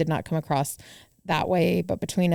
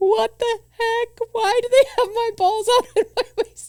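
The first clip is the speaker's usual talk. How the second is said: mock blubbering sob, very high-pitched; 3 dB louder than usual. Retelling a man's reply from the back seat, imitating someone sobbing. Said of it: "Just sobbing".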